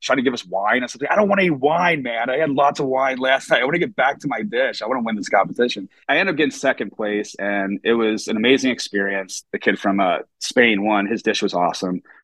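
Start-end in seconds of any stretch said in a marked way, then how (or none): 1.1-5.9 panicky, freaked-out, higher-pitched voice. Retelling asking to get back to the kitchen: retelling own freaking out. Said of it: "freaking out".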